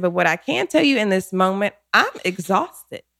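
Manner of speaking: usual speaking voice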